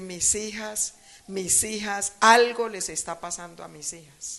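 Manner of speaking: normal talking voice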